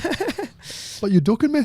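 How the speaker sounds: put-on Irish accent. Joining in on the fight call-out bit, in a mock Irish accent. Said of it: "you went back to Irish".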